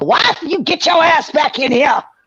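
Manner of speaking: put-on loud hollering in a strong Southern accent. Telling him how to answer the door next time: best Southern voice, yelling. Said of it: "in your best Southern voice".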